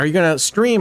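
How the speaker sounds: put-on excited voice. Retelling a dealer asking about the stream: imitating an excited dealer. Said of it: "all excited".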